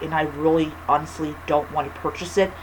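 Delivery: ordinary talk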